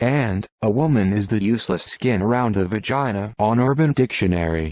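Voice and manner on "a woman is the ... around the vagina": plain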